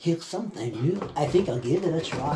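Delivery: sleazy, fudged-up, mangled, pompous dirtbag character voice. Describing a side character's voice in a review: imitating a character's messed-up voice. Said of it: "the most fudged up voice ever".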